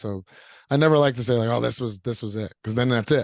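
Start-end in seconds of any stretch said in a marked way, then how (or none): none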